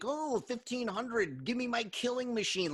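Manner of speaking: mock sarcasm, cocky, taunting, forceful delivery. Retelling characters demanding a gun from a seller: imitating a sarcastic demand. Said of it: "they're so sarcastic".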